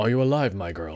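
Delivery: put-on low sexy voice. Voicing a male character while playing, sexy voice for male character. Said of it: "I gave him a sexy voice".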